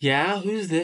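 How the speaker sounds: puzzled, unsure, confused, questioning tone. Acting out a phone script, voicing the woman who answers the call, confused.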